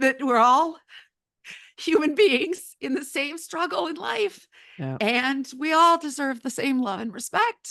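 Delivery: high, tearful speech pushed out through weeping. Speaking about a legacy he hopes for, the speaker can't stop: crying while talking. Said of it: "because I can't stop crying".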